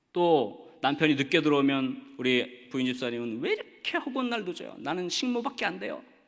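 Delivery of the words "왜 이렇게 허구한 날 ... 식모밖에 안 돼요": put-on, high-pitched, grumbling complaining voice. A speaker acts out a wife whose husband comes home late: mock grumbling wife. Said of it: "이렇게 투덜거리는 것이 아니라".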